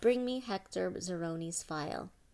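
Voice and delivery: ordinary talk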